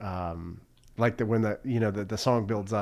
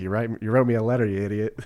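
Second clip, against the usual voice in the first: put-on condescending voice, getting louder; 6 dB louder than usual. Quoting a film scene, imitating Lieutenant Dan talking down. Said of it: "he just talks down to Forrest Gump".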